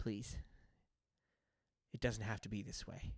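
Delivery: desperate, hushed small-creature whisper. A small creature speaks to the player, desperate small creature voice. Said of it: "Desperation in this small creature's voice".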